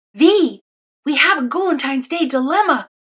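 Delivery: stage whisper, loud. Reading a story aloud, Demi suddenly appears beside Vi in the classroom; loud whisper. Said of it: "he whispers loudly".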